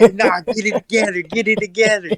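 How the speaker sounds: mild, held-back, hollered yell. Retelling how Josh yelled at them during a game: imitating Josh yelling. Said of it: "And Josh over there yelling at us".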